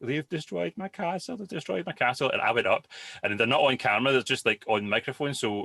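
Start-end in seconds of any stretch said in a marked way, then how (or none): 0.0-2.3 play-acted, high, pure sobbing cry through the words. Retelling how he came downstairs after his castle was destroyed, imitating someone sobbing. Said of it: "So he came downstairs crying, like pure sobbing".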